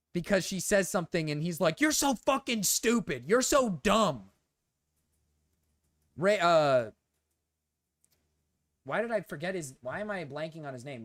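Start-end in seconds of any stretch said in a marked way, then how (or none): 1.8-4.2 furious, high-pitched angry outburst. Retelling how Mrao reacts to Clover's remarks: imitating Mrao flipping out angrily. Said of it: "Mrao just literally flips his shit".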